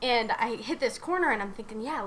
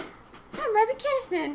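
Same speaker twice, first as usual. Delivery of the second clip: very high, squeaky little voice; 11 semitones higher than usual. Teasing someone about their old Jackass videos, imitate Robbie Kinnison's little squeaky voice. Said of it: "you had like this little squeaky voice".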